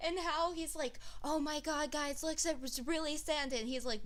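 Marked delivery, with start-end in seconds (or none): 1.2-3.6 projected stage whisper-shout. Retelling a kid's video claiming to see Santa: imitating a kid whisper shouting. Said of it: "whisper shouting".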